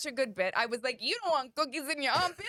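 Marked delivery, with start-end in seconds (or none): 1.0-2.5 put-on New York accent, high pitch. Retelling own past joke about deodorant: New York accent. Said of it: "You sound like my daughter doing a New York accent".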